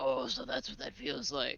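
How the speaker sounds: low, gravelly whispered voice. Mocking a hero who talks alone, the speaker quotes him: weird gravelly Batman voice. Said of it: "your weird gravelly Batman voice".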